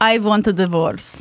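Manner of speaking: put-on Russian accent. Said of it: "You can do a Russian accent".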